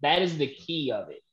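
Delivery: plain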